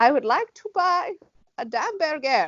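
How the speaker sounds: put-on German accent in English. Describing the man she married, the speaker quotes him in a german accent. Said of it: "speaks in a German accent".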